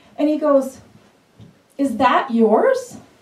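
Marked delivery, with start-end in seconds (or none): 1.8-3.0 judgmental, disapproving tone of voice. Retelling a staring man's question to a young mother: imitating a scowling man. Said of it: "he starts scowling at her".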